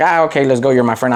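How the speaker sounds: ordinary delivery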